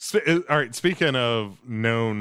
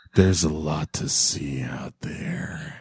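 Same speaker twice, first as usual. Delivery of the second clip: put-on creepy man voice, lower; 7 semitones lower than usual. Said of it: "here's a creepy line".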